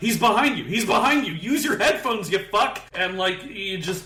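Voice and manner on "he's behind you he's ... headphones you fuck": high-pitched screaming yell. Retelling screaming warnings at teammates on screen: imitating screaming at the screen. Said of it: "I've been screaming at the screen".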